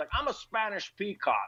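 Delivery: put-on Scottish accent pitched way up high. Mocking how Sean Connery never changes his accent in roles, Sean Connery impression. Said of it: "he does Highlanders".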